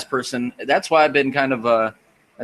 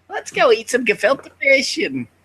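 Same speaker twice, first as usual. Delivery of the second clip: put-on very high-pitched old woman voice.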